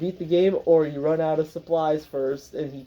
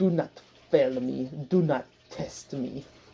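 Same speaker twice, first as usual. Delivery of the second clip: put-on heavy, thickly laid-on German accent; 4 dB quieter than usual. Retelling a character's demands to the player, in a heavy german accent. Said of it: "in a heavy German accent".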